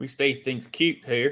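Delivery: strange, slow, put-on country accent. Reacting to a cute moment with a catchphrase: weirdest country accent. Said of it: "with the most weirdest country accent ever".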